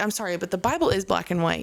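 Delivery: plain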